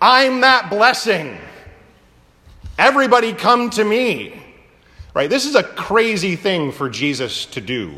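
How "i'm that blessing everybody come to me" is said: mock high, raised shout. Picturing a man from the crowd calling out: imitating someone shouting. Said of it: "starts shouting".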